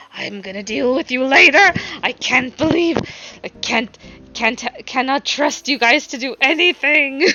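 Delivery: put-on stern whispering. Retelling how a character scolds another in Dwarvish: retelling a stern whisper. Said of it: "he whispers to him in Dwarvish, like very sternly".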